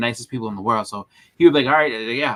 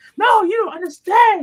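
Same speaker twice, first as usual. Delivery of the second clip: imitated puppet-like voice, higher in pitch and louder; 5 dB louder than usual. Retelling how a friend reacted about original art: imitating Jamie's Muppet-like voice. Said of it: "infringing on K-pop's Muppet voice".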